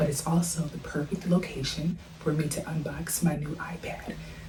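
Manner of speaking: soft, unvoiced whispering.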